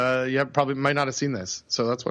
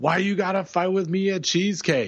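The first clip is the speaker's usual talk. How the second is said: put-on excited kid voice, calling out, yelling; 6 semitones higher than usual. Retelling what the kid yells out: imitating Sam yelling. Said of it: "And he just yells out".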